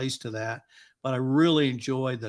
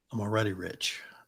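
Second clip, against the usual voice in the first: muttered under the breath, lower pitch; 4 semitones lower, 4 dB quieter than usual. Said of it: "and it wasn't loud".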